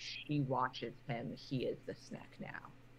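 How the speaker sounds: creeping, sinister, eerie, ominous whispering. Game master voicing spell-made whispers beside a player's character, ominous whisper. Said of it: "the ominous whispers in common are just going to be like".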